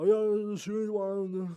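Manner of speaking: mock talking with mouth full. Retelling saying goodbye while chewing food, retelling talking with mouth full. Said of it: "with my full mouth. I go".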